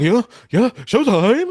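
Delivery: high, loud hype-man ad-lib yell. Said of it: "[name] is being ignorant".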